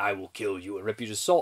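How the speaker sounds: low, deadpan, serious delivery. Reviewing a comedy, imitating the title creature: imitating Psycho Goreman deadpan serious. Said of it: "He's playing it deadpan serious".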